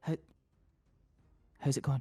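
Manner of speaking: whispering. Voicing a character leaning in beside a player at a game board: whisper. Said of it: "kind of whisper beside him".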